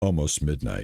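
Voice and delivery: very deep voice, sinking very low on midnight. Noting the late hour, the speaker says the word midnight in a deeper voice. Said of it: "My voice gets deeper as I say".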